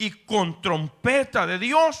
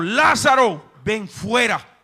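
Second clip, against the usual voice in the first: powerful, acted military-style commanding voice of authority; 2 semitones higher than usual. Retelling the voice that called Lázaro back to life: acting out a commanding voice. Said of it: "Esa misma voz de autoridad".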